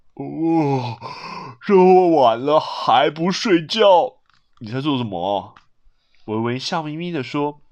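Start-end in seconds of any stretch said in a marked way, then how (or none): 0.2-5.5 speaking mid-yawn, much lower, much slower. Woken late at night by Weiwei, Dad answers her, yawning. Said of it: "爸爸打了一个好大的哈欠".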